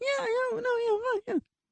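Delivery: very high, dog-whistle pitch, way up high. Retelling a dinner partner's answer: imitating a very high-pitched voice. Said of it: "several dogs in the vicinity that heard".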